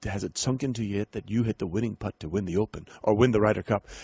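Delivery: put-on, proper-sounding British accent. Retelling a reporter's question to a golfer: proper British accent. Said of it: "in this proper British accent".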